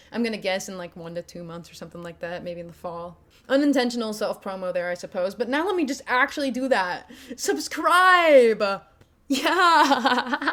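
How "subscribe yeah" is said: put-on hype, mock enthusiastic, higher and louder. Asking viewers to subscribe at the end: mock enthusiastic. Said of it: "We're being real enthusiastic now".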